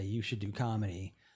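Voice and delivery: normal talking voice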